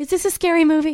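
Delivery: put-on very high, loud, frightened little child's voice. Retelling a kid's questions during a spooky movie: imitating a scared kid. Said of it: "'cause he was scared".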